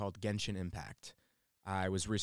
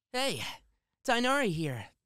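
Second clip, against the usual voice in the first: nerdy, nasal, high-pitched, bright and lively bounce; 14 semitones higher, 5 dB louder than usual. Asked what the character sounds like, demonstrating: Tighnari voice. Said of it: "So he sort of just sounds like this".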